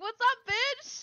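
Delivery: very high-pitched voice. Retelling their own earlier greeting to someone; high-pitched voice. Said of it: "I did it in like a, a probably like a high pitched voice".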